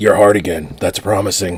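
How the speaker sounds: put-on gruff superhero voice. Joking about a film scene in a put-on voice: Batman voice. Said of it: "I did that in the Batman voice".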